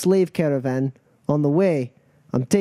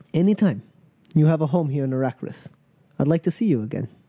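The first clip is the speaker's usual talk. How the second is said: character voice with audible smile. Voicing a character who grins after a kiss: grinning character voice. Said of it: "He grins and he goes".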